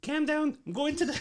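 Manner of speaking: put-on Scouse accent, pitched very high. Saying a viewer's line when asked for Scouse: put-on Scouse accent. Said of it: "Say that in Scouse".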